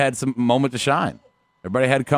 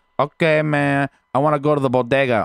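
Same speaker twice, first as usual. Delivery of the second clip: clumsy, badly done put-on Mexican accent. Trying out an accent after being told it's hard: attempted Mexican accent. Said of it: "it's hard to do one Mexican".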